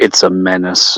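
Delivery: muttered under breath. Role-player voicing a character in conversation, muttering under his breath. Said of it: "he mutters under his breath".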